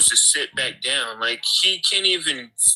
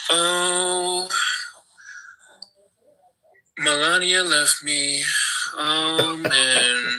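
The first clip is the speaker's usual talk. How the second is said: slow put-on voice with drawn-out oh; 2 semitones higher than usual. Putting on a Trump wig to joke about Melania leaving: Donald Trump impression. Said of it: "let me put on my Trump wig and say".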